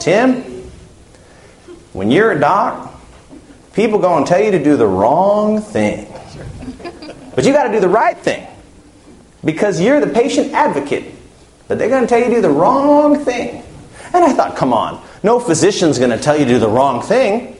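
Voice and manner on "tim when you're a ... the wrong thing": put-on Texas accent, pitched up. Quoting a man from Texas giving him advice, in a Texas accent. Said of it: "he's got this accent".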